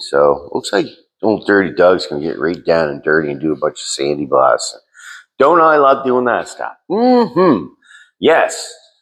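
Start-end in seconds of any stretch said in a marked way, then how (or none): 5.4-8.7 sarcastic, sing-song fake cheer and delight. Talking about sandblasting old truck parts: sarcastic mock enthusiasm.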